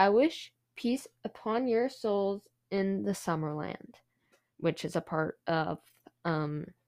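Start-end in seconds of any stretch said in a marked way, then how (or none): none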